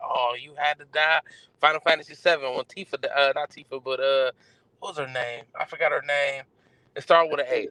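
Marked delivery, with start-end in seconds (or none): none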